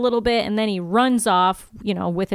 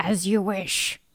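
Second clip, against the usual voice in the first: put-on demon voice, quieter; 5 dB quieter than usual. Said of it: "just adding a little flavor for you".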